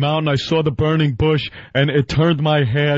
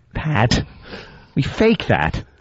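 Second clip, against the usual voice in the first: normal talking voice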